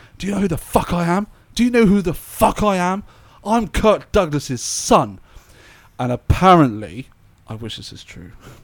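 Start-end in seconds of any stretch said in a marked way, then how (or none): 0.2-5.2 put-on enraged, high-pitched screaming rant. Retelling how a performer turned on his audience, imitating someone screaming at an audience. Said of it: "started screaming at the audience".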